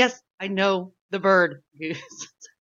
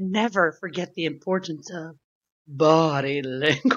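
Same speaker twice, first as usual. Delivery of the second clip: put-on sea witch voice, pitched lower; 3 semitones lower than usual. Speaker quoting a Disney movie during a quiz, in a lame Ursula voice. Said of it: "my Ursula voice".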